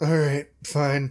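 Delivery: with a sigh. Storyteller voices Siggy's reply in the scene: sighing. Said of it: "Siggy sighs".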